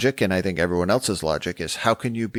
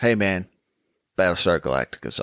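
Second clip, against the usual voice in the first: usual speaking voice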